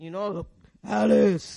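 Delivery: deep, booming, rough, fearsome God voice. Speaker describing hearing from god in quiet time, imitating the voice of god. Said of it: "Imagine if God sounded like that. That's scary".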